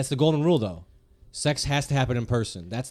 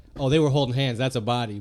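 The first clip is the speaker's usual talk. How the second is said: plain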